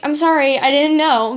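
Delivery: plain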